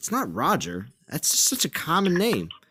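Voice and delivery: ordinary talk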